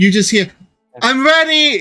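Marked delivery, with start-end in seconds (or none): 1.0-1.8 rowdy, loud, boisterous, very high-pitched holler. Voicing someone heard from inside the tavern: loud boisterous voice. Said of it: "with a loud, boisterous voice".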